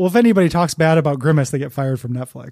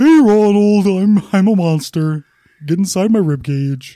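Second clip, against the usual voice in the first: big dumb guy voice, louder; 3 semitones higher, 4 dB louder than usual. Guessing how Grimace talks in the commercials: big dumb guy Grimace voice. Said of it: "big dumb guy voice".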